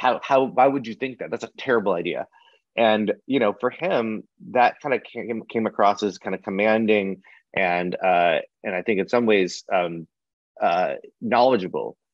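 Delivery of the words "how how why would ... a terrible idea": put-on snarky, condescending voice. Retelling how a former colleague answered clients: imitating someone condescending. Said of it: "condescending and be like".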